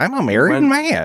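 very high, goofy, silly put-on voice. Telling the other speaker he keeps announcing to everybody he's married: put-on voice. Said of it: "And that voice".

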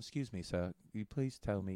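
put-on British actor voice. Asking where the bathroom is, sounding like Michael Caine. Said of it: "now I sound like Michael Caine".

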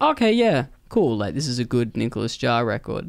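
plain

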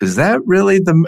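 high-pitched, incredulous, disbelieving tone.

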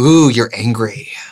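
put-on condescending, patronizing, taunting tone. Imitating a reunion line to the others: imitating Lisa, condescending. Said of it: "It is so condescending".

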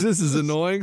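ordinary delivery

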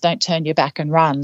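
normal talking voice

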